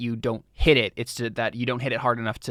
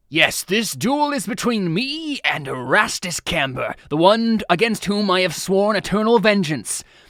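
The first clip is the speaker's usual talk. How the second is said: high-pitched, slow character voice; 7 semitones higher, 4 dB louder than usual. Narrating as the players move away, speaking in Scarlarker voice. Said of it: "Scarlarker's like".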